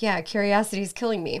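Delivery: ordinary talk, nothing marked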